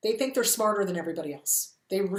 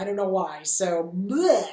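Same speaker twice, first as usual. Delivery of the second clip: normal talking voice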